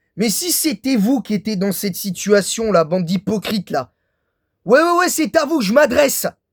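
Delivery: voice working up into growing anger. Addressing a group the speaker calls hypocrites, getting angry. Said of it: "Parce que oui, je m'énerve".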